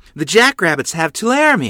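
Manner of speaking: sudden, high, loud exclamation. Ma tells her daughters the news, exclaiming. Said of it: "Ma exclaimed".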